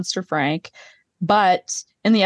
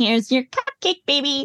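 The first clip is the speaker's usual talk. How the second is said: painfully fake, sugary sweet voice, pitched up; 6 semitones higher than usual. Retelling a scene she found painfully fake: imitating a painfully fake voice. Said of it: "being so painfully fake in this scene".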